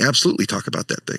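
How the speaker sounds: ordinary talk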